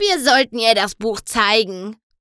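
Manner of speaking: grumpy, grumbling delivery. A grumpy old mare speaks up after Twilight pauses to listen: grumbling grumpily. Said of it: "grummelte eine mürrische alte Stute".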